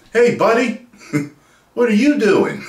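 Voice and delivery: very high, loud, swooping, bouncy pitch. Showing how people expect Spider-Man to talk: Spider-Man voice. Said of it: "You always expect him to kinda talk like this".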